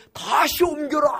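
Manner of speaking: loud shout in a commanding, kingly voice.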